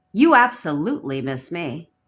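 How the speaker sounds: firm, commanding, certain tone. Demonstrating how inner conversations should sound, commanding certainty. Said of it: "That's a command. That's certainty".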